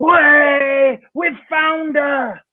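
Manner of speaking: mock, high, full-lunged screaming shout, drawn-out way. Retelling how a man at the back of the show yelled, retelling a loud scream. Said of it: "screamed as loud as he could".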